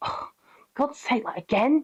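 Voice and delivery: put-on sulky, moody teenager voice full of attitude. Speaker complaining about dog Atlas's attitude, voicing him as a mock moody teenager. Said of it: "He's such a moody teenager".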